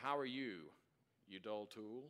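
affectionate, teasing, sarcastic jab. Retelling a brother's phone greeting: imitating brother's sarcastic greeting. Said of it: "that kind of sarcasm".

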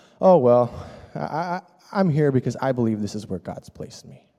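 mock nonchalant, matter-of-fact, put-on casual tone. Retelling a man's answer to them, in a mock-nonchalant, matter-of-fact tone. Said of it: "nonchalantly, matter-of-factly".

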